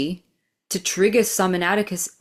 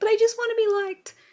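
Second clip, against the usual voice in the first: small, squeaky little voice, very high. Speaker recalling what her inner little self was saying, tiny squeaky little voice. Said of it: "this little tiny little squeaky voice being like".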